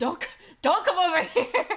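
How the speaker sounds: mock-scared voice. Repeating what a man in a recording said, imitating a scared man. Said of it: "He sounded so scared".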